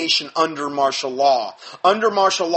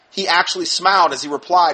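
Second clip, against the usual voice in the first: usual speaking voice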